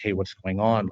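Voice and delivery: put-on panicked voice. Retelling how the mother looked over and asked: imitating someone panicked. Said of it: "kinda almost like in a panic situation".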